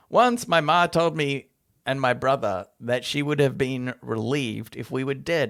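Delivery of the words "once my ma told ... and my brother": plain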